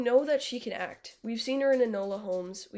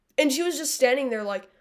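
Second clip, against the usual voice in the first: ordinary talk, nothing marked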